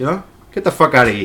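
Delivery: TV-gangster accent, rattled off quickly. The speaker explains how watching a show changed their accent: Sopranos-style accent. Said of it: "Now it turns into talking like this".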